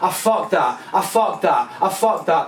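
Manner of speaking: ordinary talk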